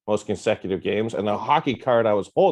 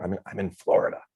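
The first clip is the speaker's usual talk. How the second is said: soft whispered aside; 4 dB quieter than usual. Admitting where they are at the moment: whispering. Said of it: "I'm gonna whisper this part".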